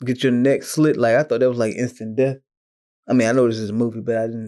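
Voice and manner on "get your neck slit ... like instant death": ordinary talk, nothing marked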